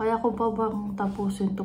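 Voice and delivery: ordinary talk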